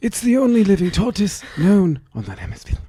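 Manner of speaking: very high, swooping nature-documentary narrator voice. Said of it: "read this one in the Attenborough vo-, voice".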